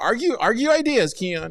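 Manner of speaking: high, loud, sarcastic mock scolding tone.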